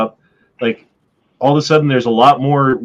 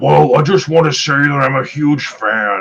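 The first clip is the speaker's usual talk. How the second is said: demonic put-on devil character voice. Imagining a man waking up in hell and greeting him, in Satan voice. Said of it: "That was my Satan voice".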